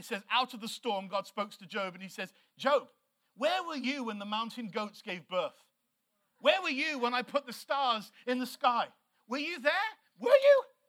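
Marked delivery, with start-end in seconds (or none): 2.6-10.6 dripping, heavy, pointed sarcasm. Retelling how god answered job out of the storm, retelling god's sarcastic reply. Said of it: "really sarcastic".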